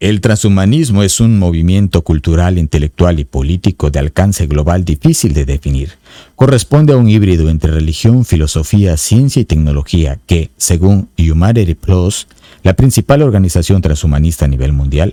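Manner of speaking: deep, very low radio-broadcaster announcer voice. Speaker reading a paragraph from a book to listeners, in an announcer voice. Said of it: "Así con voz de locutor".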